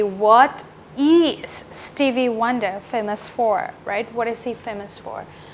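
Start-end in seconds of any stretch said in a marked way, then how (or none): 0.0-3.7 stress on is, given a clear lift. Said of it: "the correct way to ask would be".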